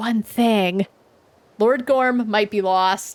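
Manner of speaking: elf voice speaking in a whisper. Voicing an elf who leans forward to share a secret: whispering elf. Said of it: "she whispers to you".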